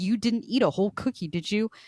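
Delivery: mock seething fury, barely contained, thin concern. Retelling how she asked him a question: mock seething rage. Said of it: "ninety percent seething rage".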